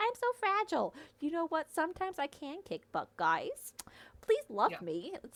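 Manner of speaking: high, derisive send-up voice. Retelling what Violet says in the book: mocking Violet impression. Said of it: "it's just so infuriating of".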